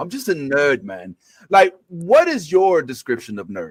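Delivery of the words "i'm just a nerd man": clumsy, bad put-on British accent. Quoting the guest's interview words in a British accent. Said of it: "my British accent".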